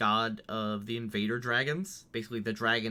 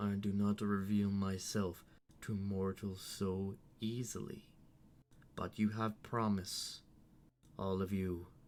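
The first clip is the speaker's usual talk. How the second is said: knowing dragon voice, quieter; 6 dB quieter than usual. Storyteller voices a dragon answering the players, knowing dragon voice. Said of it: "The dragon speaks, um, knowingly".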